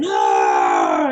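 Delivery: fiery yelled-out shout. Showing how the poem was once performed: shouting. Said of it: "a los gritos".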